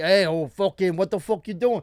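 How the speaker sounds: put-on Jersey accent. Talking about how people in Brooklyn and New Jersey talk, Brooklyn-New Jersey accent impression. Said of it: "Brooklyn, New Jersey, Staten Island. They're like".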